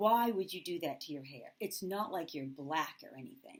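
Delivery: ordinary talk, nothing marked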